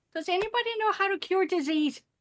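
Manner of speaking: shrill, very high, loud yelling call. A player's character yells a question to anybody nearby: yelling out. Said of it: "And I yell out".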